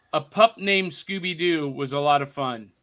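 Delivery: normal talking voice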